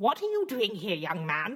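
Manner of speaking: put-on acted elderly woman's voice. Greeting a young man who has come to rescue her: old woman voice. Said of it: "Look how good my acting is!".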